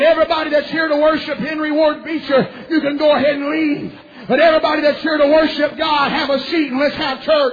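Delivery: very loud, high, preacher-style hollering. Retelling how a preacher's brother ran to the pulpit to address the crowd, retelling a loud holler. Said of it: "he hollered with a loud voice".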